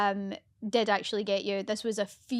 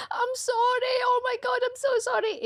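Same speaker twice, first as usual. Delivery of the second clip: crying, tearful, very high pitch, slow. Retelling a joke on James that backfired, imitating Harrison crying. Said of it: "and then Harrison started crying".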